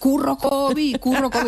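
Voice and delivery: high, shouted cry, like an excited fan.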